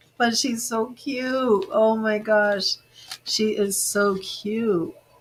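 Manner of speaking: gushing, tearful speech through crying. Reacting to someone, the speaker says they can't stop crying: crying. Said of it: "I can't stop crying".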